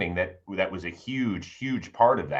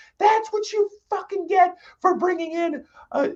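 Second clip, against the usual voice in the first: very high, raised, out-of-control scream; 5 dB louder than usual. Retelling screaming at the top of the lungs at a baseball game: imitating own past screaming. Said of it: "started screaming at the top of my lungs".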